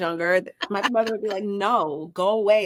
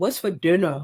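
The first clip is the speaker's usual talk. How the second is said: put-on deep, old-man-sounding, grown-up kid voice; 3 semitones lower than usual. Imitating a seven-year-old boy who sounds older, in a deep voice. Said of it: "he has a deep voice".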